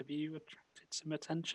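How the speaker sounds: very quiet, low, hushed undertone. Near the bar, the character asks another a question in a low voice. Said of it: "I say in quite a low voice".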